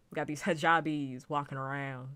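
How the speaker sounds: put-on Southern accent. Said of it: "Doing that Southern accent".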